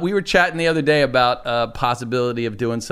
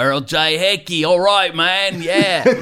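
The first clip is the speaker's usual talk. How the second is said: deliberately terrible fake Australian accent; 4 semitones higher than usual. Retelling what an Australian guy across from him said, in a terrible Australian accent. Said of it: "I'm going to do a terrible Australian accent".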